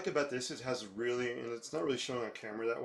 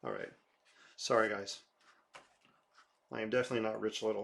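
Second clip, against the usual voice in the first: ordinary talk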